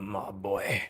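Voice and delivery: put-on cowboy-style Western accent. Starting a drawing stream after hitting the tripod: put-on Western accent. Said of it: "I'm doing the Western accent immediately".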